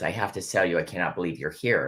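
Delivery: ordinary delivery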